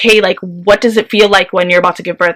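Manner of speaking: normal talking voice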